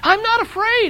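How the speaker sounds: very high, storybook-style yell. After an avalanche nearly hits them, Frog speaks to Toad, shouting. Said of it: "he shouted".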